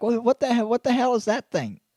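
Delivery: put-on pet dog voice. Voicing what the pet is thinking on the call: voicing the pet dog's thoughts. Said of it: "He's like".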